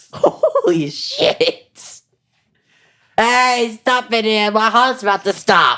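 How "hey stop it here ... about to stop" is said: put-on Boston accent, high, fast, desperate and panicked. Acting out an experiment actor pleading about a heart condition, put-on boston accent. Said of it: "I had to pull out the Boston accent there".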